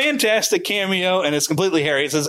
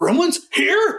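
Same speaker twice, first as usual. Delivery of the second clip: pitched-up, reined-in mild yell; 6 semitones higher than usual. Retelling Hulk Hogan turning to the screen to yell at the gremlins, imitating Hulk Hogan yelling. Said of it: "like he's yelling at them".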